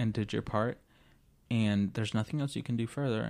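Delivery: plain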